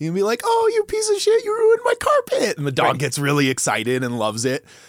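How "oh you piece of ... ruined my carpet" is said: upbeat, peppy, bright cheerful tone, very high and loud. Showing how to scold a dog in a peppy voice: very peppy tone. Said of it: "If you say something very, like, peppy".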